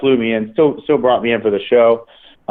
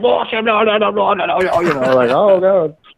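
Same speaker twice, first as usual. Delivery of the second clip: mock high-pitched screaming old lady voice; 8 semitones higher than usual. Retelling how an old lady at the show screamed at them: imitating an old lady screaming. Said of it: "This old lady is screaming at me in French".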